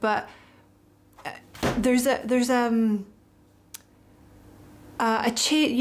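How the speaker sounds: stuttering, stumbling over words. Speaker giving advice about work and money, stuttering. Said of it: "sorry, I'm stuttering".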